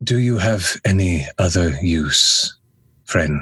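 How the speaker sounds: whispering in a put-on voice. Speaking in character to a captive: whispering in character. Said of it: "I'm gonna whisper one more time".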